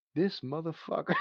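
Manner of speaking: quiet mutter under the breath. Retelling a movie character's reaction: imitating muttering under breath. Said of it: "He says it under his breath".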